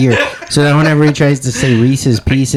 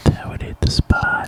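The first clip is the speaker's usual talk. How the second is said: hushed, soft, whispered ASMR murmur; 7 dB quieter than usual. Showing the others how the phrase should be said, in an ASMR voice. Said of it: "You gotta say it with the A S M R voice too".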